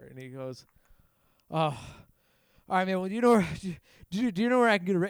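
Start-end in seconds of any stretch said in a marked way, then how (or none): 1.5-5.1 put-on panicked man's voice, higher and louder. Retelling what a stranger asked on the street: imitating a panicked man. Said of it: "And he started getting panicked".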